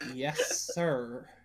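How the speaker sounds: quiet, mocking, heavily sarcastic tone. A character answers being told to eat in private, very sarcastic. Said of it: "she says very sarcastically".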